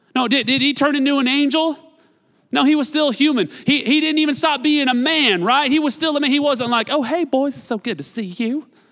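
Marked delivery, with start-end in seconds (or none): 6.9-8.6 feminine voice put on as a joke. Joking about the resurrected Jesus greeting his disciples, in a female impression voice. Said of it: "my female impression".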